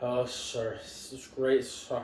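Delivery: mock drunk-sounding voice. Retelling a phone call made with a concussion, imitating a drunk-sounding voice. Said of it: "Are you drunk?".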